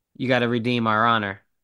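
acted hushed whisper. Recounting a film scene, voicing the cop speaking to Ip, imitating a whisper. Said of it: "he whispers to Ip".

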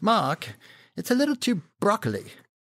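put-on high-pitched British accent with swooping pitch. Retelling a meeting with the CEO, quoting him: Mark Thompson British accent. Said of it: "he's got a British accent, and I'll, I'll do it".

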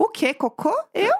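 very high-pitched, fake innocent tone. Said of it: "a cara depois é assim".

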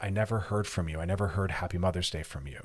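usual speaking voice

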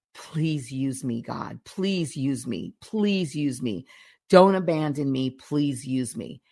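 acted-out desperate begging, crying. Describing a film scene, the speaker acts out a man alone begging god: re-enacting desperate begging. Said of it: "He's just begging God".

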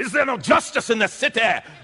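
high, ringing preacher voice.

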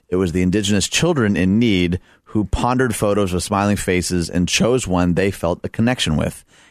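ordinary talk

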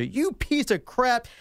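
high, mock furious screaming outburst. Retelling a girl screaming at the bouncer: imitating someone screaming. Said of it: "is screaming at the bouncer".

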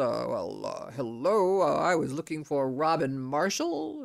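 halting, hesitant, thrown-off tone. Retelling a client's reply to an unfriendly phone greeting: imitating a put-off client. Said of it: "my client is put off and says".

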